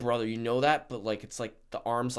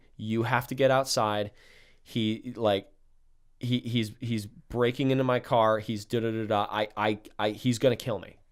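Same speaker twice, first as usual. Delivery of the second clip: plain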